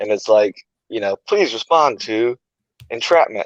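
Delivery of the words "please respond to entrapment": put-on automated navigation-style robotic announcement voice. Speaker recalling a call over the station intercom, imitating a GPS-type voice. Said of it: "some you know like a G P S voice type thing".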